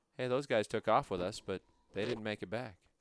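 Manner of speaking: plain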